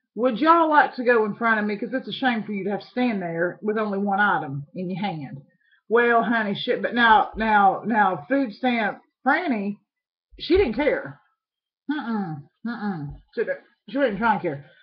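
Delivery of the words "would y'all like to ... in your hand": ordinary talk, nothing marked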